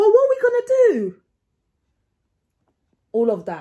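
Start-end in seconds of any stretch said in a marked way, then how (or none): 0.0-1.2 high, loud, acted panic. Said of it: "You need to act like".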